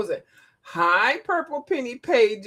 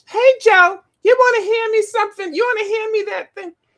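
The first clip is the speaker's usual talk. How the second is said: fond, friendly, very high, loud affectionate voice; 10 semitones higher, 7 dB louder than usual. Imitating Miss Beth talking to Joe: Miss Beth's voice, said affectionately. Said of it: "your voice and the way you say it".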